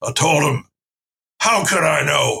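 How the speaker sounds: put-on elderly man's voice. Telling how an old man held everybody's attention while pointing at his shoes, imitating an old man's voice. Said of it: "I'll just do his voice".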